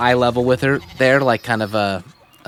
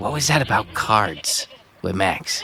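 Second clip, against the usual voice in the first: quiet, hushed, secretive, curious tone. Asking a question out of curiosity, in a hushed voice. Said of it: "to say this in a hushed voice".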